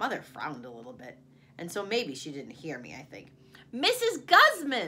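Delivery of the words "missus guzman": shrill, very high, very loud holler. A child repeats a name to a mother who didn't hear, hollering. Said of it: "I hollered".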